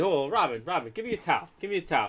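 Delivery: father's voice played for laughs. Retelling a friend's impression of the speaker's dad talking to Corey: imitating a father. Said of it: "Darren doing an impression of my dad".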